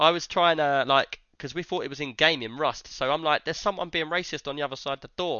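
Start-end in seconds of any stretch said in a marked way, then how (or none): none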